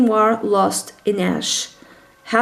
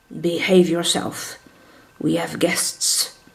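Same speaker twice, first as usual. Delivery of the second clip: muttered quietly under the breath, lower pitch; 4 semitones lower, 3 dB quieter than usual. Reading a story aloud, the father answers the young man: under his breath. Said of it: "under his breath".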